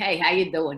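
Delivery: casual, put-on Brooklyn accent. Joking about teaching English in Europe: Brooklyn accent. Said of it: "I'd send a lot of people back here going".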